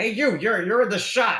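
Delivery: loud, high calling voice.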